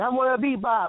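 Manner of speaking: put-on little kid voice. Retelling how he answered her question as a small boy, in a little six-year-old voice. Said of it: "with my little six-year-old voice".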